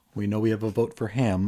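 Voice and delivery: ordinary talk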